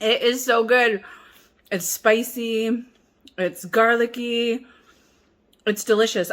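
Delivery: talking with mouth full. Tasting kimchi with rice, talking with mouth full. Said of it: "I'm talking with my mouth full".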